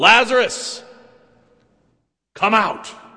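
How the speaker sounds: loud, high calling out. Retelling a story, calling a man out of the darkness, loud voice. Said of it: "in a loud voice says".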